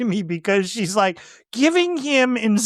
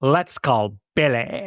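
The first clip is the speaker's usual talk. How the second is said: put-on, affected valley girl voice; 8 semitones lower than usual. Imitating a character's affectation while discussing a movie scene: imitating a valley girl affectation. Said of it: "like a Valley, Valley Girl type of thing".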